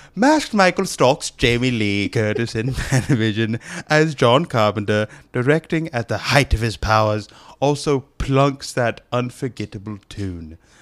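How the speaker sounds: put-on British man's accent. Reading the movie's list entry after being asked: British guy voice. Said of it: "hit us with that British guy voice".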